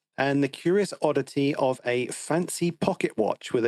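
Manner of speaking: normal talking voice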